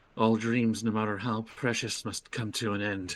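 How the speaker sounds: hushed under-breath whisper. In a game scene, a character speaks just under her breath; whispering under her breath. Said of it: "just under her breath, she whispers".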